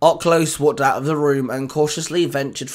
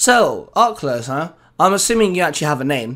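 ordinary delivery

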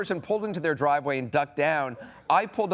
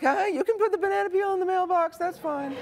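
very high, anxious, placating voice. Retelling what he would have said to a big guy, retelling nervous high voice. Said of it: "His voice got really high".

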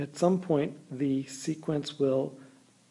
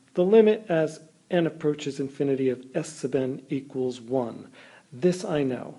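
usual speaking voice

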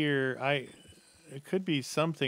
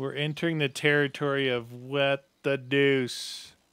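usual speaking voice

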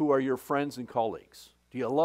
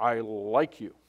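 deep, low, manly voice; 4 semitones lower than usual. Retelling Peter's reply to the question of love; Peter's manly voice. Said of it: "Peter says in his manly voice".

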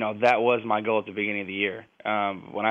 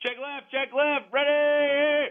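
very high, very slow, drawn-out shouted call. Calling out an audible in full voice when asked: yelling a play call. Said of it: "I'm about to yell".

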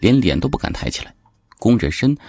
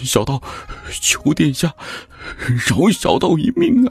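very high, halting, trembling, quavering, begging voice; 9 semitones higher than usual. Knees giving way, a Taoist clutches the prince's leg begging for his life, trembling plea. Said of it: "颤声求饶".

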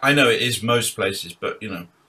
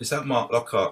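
timid, quiet, shy, softly spoken; 3 dB quieter than usual. Retelling a phone call from a drummer asking to join his band: imitating Seb speaking quietly and shyly. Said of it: "he speaks very quietly, very sh-, shy".

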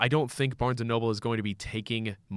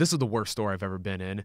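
usual speaking voice

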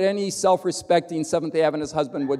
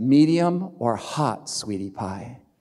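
mock-romantic breathy tone, much lower pitch; 6 semitones lower than usual. Retelling what a woman holding his hand said to him, mock-romantic, breathy tone. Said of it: "she says to me in a kind of romantic, breathy tone".

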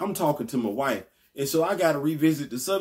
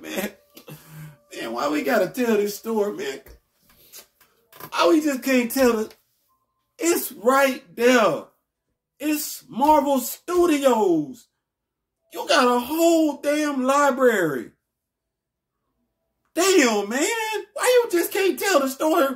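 very high, raised, heated, worked-up rant; 10 semitones higher, 5 dB louder than usual. Upset after a friend called the movie bad, the speaker vents: heated, high-pitched voice. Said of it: "You hear how hot my voice is right now?".

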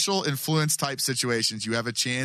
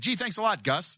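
mock, high, sarcastic, passive-aggressive tone; 7 semitones higher than usual. Saying what they would tell gus, in a passive-aggressive tone. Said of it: "I would actually be very passive aggressive".

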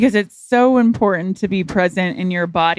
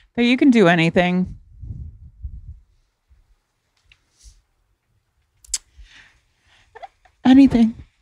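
teary voice, on the verge of tears; 3 semitones higher than usual. Asked what readers should take away from the book, answering about to cry. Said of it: "I'm going to cry again".

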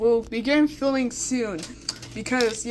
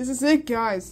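ordinary delivery

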